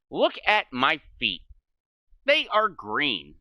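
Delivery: exaggerated singsong voice.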